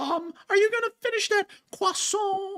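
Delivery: put-on very high, cartoon-style kid voice. Showing a disguise voice to another speaker: Carl Wheezer voice. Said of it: "I'm gonna talk like Carl Weezer".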